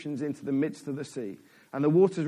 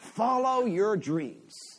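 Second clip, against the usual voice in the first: high-pitched put-on American accent; 5 semitones higher than usual. Speaker quotes what Instagram posts say, in an American accent. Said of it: "I don't know why that's in an American accent".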